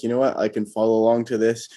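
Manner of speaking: plain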